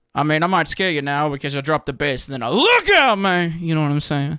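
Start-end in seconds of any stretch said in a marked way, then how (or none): 2.5-3.6 loud, big, pitched-up rock-and-roll voice. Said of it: "I gotta work on my impersonation".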